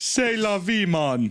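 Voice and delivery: put-on Jamaican accent. Trying to pronounce French, sounding like a mock Jamaican accent. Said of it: "like you're trying to do a Jamaican accent".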